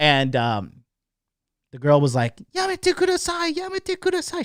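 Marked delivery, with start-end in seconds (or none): 2.5-4.4 mock shriek, much higher. Retelling how a girl screamed at a man during a drunken fight, imitating a shriek. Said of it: "She was like screaming, like shrieking at the top of her voice".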